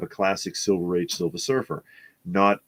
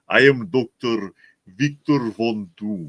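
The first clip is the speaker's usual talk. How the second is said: slow, deliberate Eastern European accent; 3 semitones higher, 3 dB louder than usual. Showing how a villain should sound: Doctor Doom voice with Eastern European accent. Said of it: "Doctor Doom should have an Eastern European accent".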